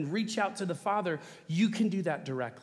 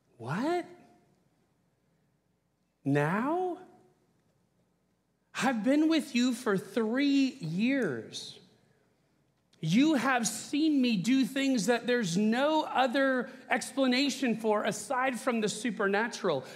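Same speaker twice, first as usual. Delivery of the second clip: put-on, pitched-up sarcastic tone; 5 semitones higher than usual. Retelling Jesus's reply to those who say he came from God, acting out Jesus's sarcasm. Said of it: "if you hear sarcasm in my tone".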